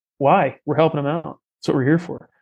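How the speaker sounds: ordinary delivery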